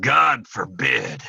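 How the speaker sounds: rough, gruff Texan growl of a voice. Retelling a talk about cowboys, the speaker quotes Trent: imitating Trent's gruff Texas voice. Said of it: "in his gruff Texas voice".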